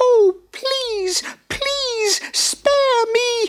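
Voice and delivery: very high, squeaky, terrified little mouse voice. Narrator reads the mouse's reply to the angry lion, as a squeaky terrified mouse. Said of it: "squeaked the terrified mouse".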